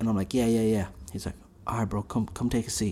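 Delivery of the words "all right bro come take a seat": whisper, much quieter. Retelling what a crouched man said when the speaker walked in, imitating someone whispering. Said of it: "why are you whispering?".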